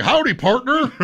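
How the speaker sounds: very high, put-on Texas accent. Imitating a server at a Texas-themed restaurant: put-on Texas accent. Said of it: "Go to a place that has Texas in the name".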